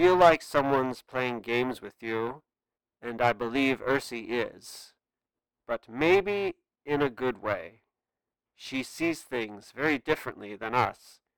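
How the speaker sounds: soothing, soft, fatherly, a touch condescending. Shiro answers Nathan's demand for answers: calming, fatherly voice. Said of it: "spoke in a calming, fatherly voice".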